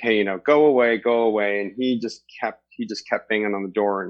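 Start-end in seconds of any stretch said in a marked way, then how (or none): none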